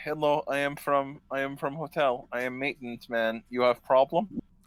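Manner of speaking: put-on French accent. Retelling what the hotel maintenance man said on arrival: imitating a french accent. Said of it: "That's why he's talking like that".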